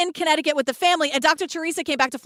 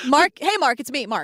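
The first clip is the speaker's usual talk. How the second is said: normal talking voice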